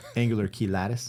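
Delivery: put-on Southern accent. Explaining a term, the speaker pronounces it in a southern accent. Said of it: "I say it with a southern accent".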